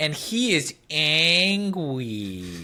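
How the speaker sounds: put-on baby voice, angry and drawn out. Recapping a chapter for a co-host, in a baby voice. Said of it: "Do you like my baby voice".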